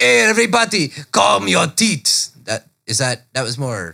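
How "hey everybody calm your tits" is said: high, slow put-on French accent. Retelling how a theater director addressed the crowd, in a French accent. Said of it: "French accent".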